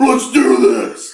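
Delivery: all-out, very high, very loud screaming war cry. Recounting crashing one armored carrier into another, retelling a scream. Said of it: "while screaming".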